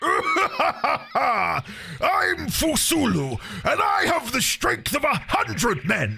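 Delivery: very high tiger-lion big cat voice. Playing the character Fusulu introducing himself, in a Fusulu tiger-lion voice. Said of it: "I really want to do a proper tiger lion voice".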